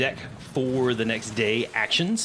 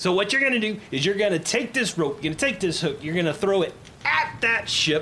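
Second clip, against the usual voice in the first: high yell at the top of the lungs; 6 semitones higher than usual. Retelling how a woman teaching the lesson yells every instruction, imitating someone yelling. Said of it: "and she's yelling at the top of her lungs".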